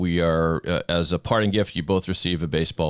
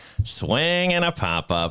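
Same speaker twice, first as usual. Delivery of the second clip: radio announcer voice, pitched much higher; 8 semitones higher than usual. Asked for a Joe Castiglione impression, the speaker does one of his calls. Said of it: "Do you have a Joe Castiglione impression".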